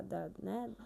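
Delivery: very quiet, hushed.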